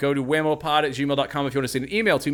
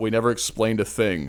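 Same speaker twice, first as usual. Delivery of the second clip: ordinary talk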